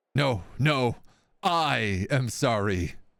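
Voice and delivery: voice cracking with panic. Voicing a man who has just been shot: voice cracking with panic. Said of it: "His voice is cracking with panic".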